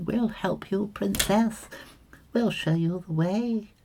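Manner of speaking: very high, silly little-bird voice. Describing a fairyland picture, the speaker voices the little birdies in a silly voice. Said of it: "Doing those silly voices again".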